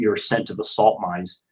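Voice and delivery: plain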